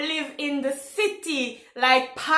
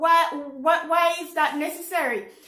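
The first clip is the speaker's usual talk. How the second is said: usual speaking voice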